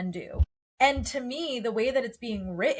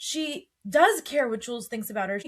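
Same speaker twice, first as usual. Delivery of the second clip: ordinary delivery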